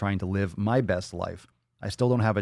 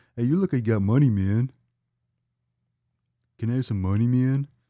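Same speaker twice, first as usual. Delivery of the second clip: stoner voice, panhandler style; 3 semitones higher, 3 dB louder than usual. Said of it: "I don't know why I sound like [name] and [name]".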